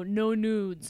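mock-joking, acted jokey delivery. Recounting the end of a Cameo intro video, retelling a joking aside. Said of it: "I jokingly looked camera and I go".

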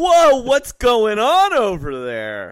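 high, loud, slow, cheesy movie-hero voice.

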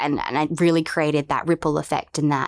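plain

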